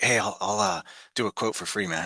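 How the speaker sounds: quiet, hushed, confiding stage half-whisper. Retelling an actor's offer made with other actors around: retelling a half-whisper. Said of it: "he whispered".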